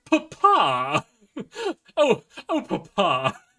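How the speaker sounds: very high, swooping posh voice. Describing a show's pirate dad and his son, imitating the posh son. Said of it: "his son grew up posh".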